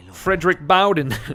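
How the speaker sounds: horrible put-on Boston accent. Saying a character's name in a put-on accent: horrible Boston accent. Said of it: "that's a horrible accent".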